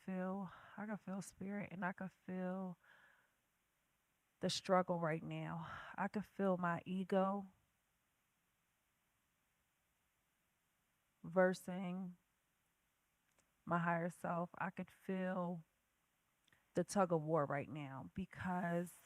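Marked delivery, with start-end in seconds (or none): 1.9-14.5 much slower, unhurried pace. Opening the Tuesday podcast, the host speaks to listeners: speaking slowly. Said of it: "I'm gonna talk slow today".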